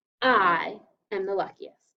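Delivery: heavy stress on the word "I". Scooping a sentence in a lesson to really emphasize I, stress on I. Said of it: "I want to really emphasize I, so that's why I scooped it this way".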